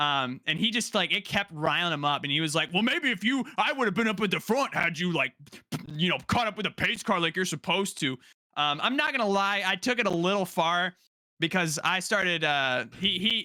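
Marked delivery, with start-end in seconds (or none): 2.7-8.1 put-on irritated, annoyed old-timer voice. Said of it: "he sounded like a real boomer".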